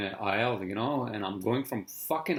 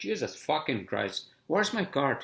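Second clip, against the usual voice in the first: exasperated, screaming cursing outburst; 4 semitones higher than usual. Retelling searching for his cart in a store: imitating his own screaming. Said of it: "I was fucking screaming".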